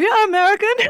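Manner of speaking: put-on thick, very high German accent. Describing German Lutheran church culture, the speaker voices its attitude in a heavy German accent. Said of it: "through a heavy German accent".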